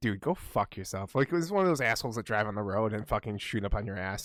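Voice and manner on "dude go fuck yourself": acted, furious, slow and deliberate angry delivery. Retelling a rude shopper pressuring them: retelling an angry outburst. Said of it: "I was so angry about that".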